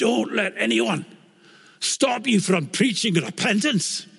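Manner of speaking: very high-pitched Scottish burr. Speaker quotes a man who hoisted him by the shirt, in a Scottish brogue. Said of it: "in his Scottish brogue".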